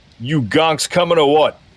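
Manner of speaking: high, bold in-character shout. After firing two shots down the elevator shaft, a player's character shouts. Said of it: "I'm going to shout".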